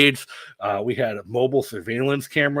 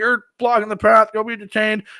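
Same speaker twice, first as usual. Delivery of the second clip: mock very high, shrill screaming; 9 semitones higher than usual. Retelling a lieutenant's order to a man blocking the path: imitating someone screaming. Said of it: "the lieutenant starts screaming at him".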